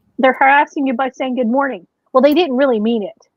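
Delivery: ordinary talk, nothing marked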